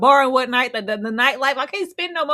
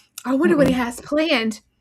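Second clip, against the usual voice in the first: put-on, mock excited voice. Retelling how an excited person wondered about a plan: imitating someone excited. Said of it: "She was all excited".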